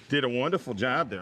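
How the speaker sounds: normal talking voice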